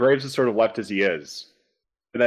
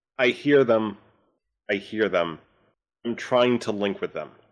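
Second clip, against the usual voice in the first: ordinary delivery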